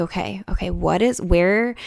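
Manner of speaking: usual speaking voice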